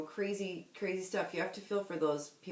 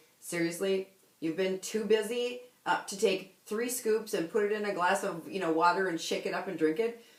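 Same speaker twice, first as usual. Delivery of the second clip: plain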